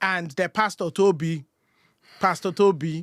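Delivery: loud put-on Nigerian accent. Saying a pastor's name in a Nigerian accent. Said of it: "I can never say that name without a Nigerian accent".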